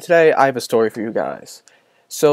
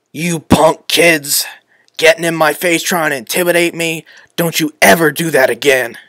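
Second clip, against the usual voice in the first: put-on old chain-smoking grandma voice; 2 semitones higher than usual. Retelling what a security guard said to him, like a chain-smoking grandma. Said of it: "sounded like an 80-year-old chain-smoking grandma".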